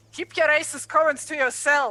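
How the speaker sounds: very loud, high-pitched, salty and snippy. Voicing a character acting annoyed while stacking wood: salty, snippy retort. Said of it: "play the salty part".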